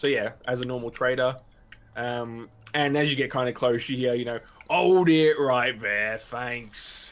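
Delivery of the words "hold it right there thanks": loud, amateur, put-on bandit accent. Voicing a bandit stopping the traders' cart: put-on bandit accent. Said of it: "this is the best accent I can do".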